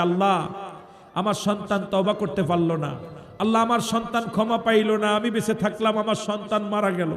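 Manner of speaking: ordinary talk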